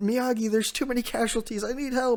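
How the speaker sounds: sobbing cry, very high-pitched. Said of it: "Chopper starts, like, crying".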